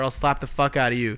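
ordinary delivery

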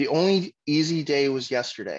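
ordinary talk

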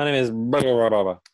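rattled off as one word. Imitating an angel giving its name, said really fast as one word. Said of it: "he probably said it really fast as one word".

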